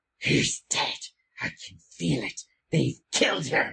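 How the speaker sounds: rasping, creaky, crackly cries. Narrating a scene, the speaker voices Mesh Kennet marching out with her were-tigers. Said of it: "you two can actually hear her crackly voice cursing".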